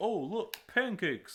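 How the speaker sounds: loud, high-pitched cartoon voice.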